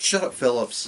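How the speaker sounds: ordinary talk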